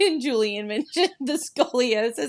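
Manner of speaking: high voice, laughing through barely held-back laughter. Recounting the judging of a dance, laughing while talking. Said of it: "I can't even say it without laughing".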